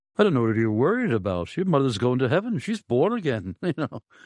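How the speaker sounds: put-on very thick, heavy Welsh accent, high and sing-song. Retell what he told you after you waited anxiously outside your mother's house, in a very thick Welsh accent. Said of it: "in his very thick Welsh accent".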